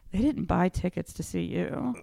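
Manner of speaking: very cool, easy-going, unbothered tone. Retelling what Anthony told the speaker before a show, imitating Anthony's cool tone. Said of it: "in his very, you know, cool tone goes".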